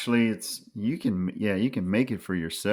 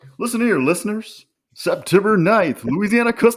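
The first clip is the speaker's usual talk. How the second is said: very high, very loud news announcer voice; 12 semitones higher, 9 dB louder than usual. Speaker handed the knife news segment on the show: best broadcast voice. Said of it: "I'm trying to do my best broadcast voice".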